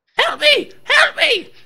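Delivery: very high, very loud, shrill drawn-out scream. Game master voicing a halfling tied to a runaway horse, screaming for help. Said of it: "and he's screaming".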